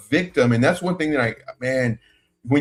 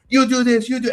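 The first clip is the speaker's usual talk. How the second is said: mock yelling in a higher voice; 10 semitones higher than usual. Retelling acting as the lady boss in front of her: imitating the boss yelling. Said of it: "I fling open the door".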